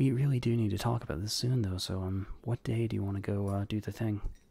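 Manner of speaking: low, soft, audible stage whisper. Speaking as Tulkas, leaning over to half-whisper to Nos: Tulkas half-whispering. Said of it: "just whispers to Werewolf".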